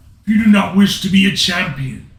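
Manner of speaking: booming, thundering, very loud, slow yell. Narrating the story, Zeus keeps walking and yells at you; booming Zeus voice. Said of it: "and with a booming voice yells to you, / and with a booming voice yells to you, / and with a booming voice yells to you".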